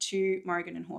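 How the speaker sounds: ordinary delivery, nothing marked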